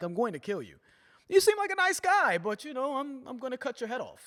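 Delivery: sweet, friendly villain voice. Imitating a movie villain making threats: nice, welcoming villain delivery. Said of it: "a very sort of nice and welcoming delivery".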